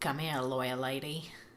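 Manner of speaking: put-on Australian accent. Quoting what he says before trying to kiss her: put-on australian accent. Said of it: "I was using my Australian accent".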